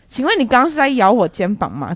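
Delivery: mock harsh, fierce, loud delivery. Retelling asking a manager who bit her shoulder: imitating a loud, fierce question. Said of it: "我就很大声的问他说".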